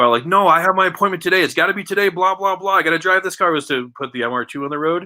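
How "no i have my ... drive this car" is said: high, angry, insistent yelling. Retelling a mother yelling at a guard: imitating someone yelling. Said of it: "yelling at the guard".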